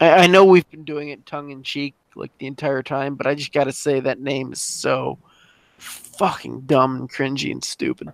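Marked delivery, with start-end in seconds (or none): 3.2-8.1 exasperated, fed-up, done-with-it ranting. Complaining to the others about a group's name: exasperated. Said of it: "Exasperated is what I was going for".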